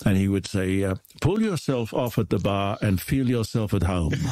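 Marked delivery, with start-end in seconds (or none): 1.2-4.1 heavy, thick put-on Hungarian accent. Recalling a man's standard line to visitors, the speaker imitates his thick Hungarian accent. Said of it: "he had a very rather thick Hungarian accent".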